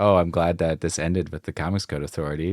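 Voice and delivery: heavy delivery dripping with sarcasm. Voicing an inner thought while sitting back with a smirk: very sarcastic. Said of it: "very sarcastically".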